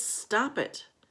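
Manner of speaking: bold, courageous tone. Narrating a story where the main character stands up to a bully, in a brave voice. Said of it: "in a brave voice says".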